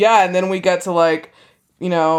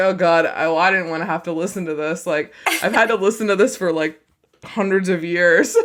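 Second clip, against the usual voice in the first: normal talking voice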